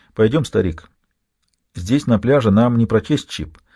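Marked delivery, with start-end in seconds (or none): none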